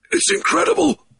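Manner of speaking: very high gasp, breath knocked away. Narrator reading a story, a man nearly strangled by driven air: gasped. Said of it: "he gasped".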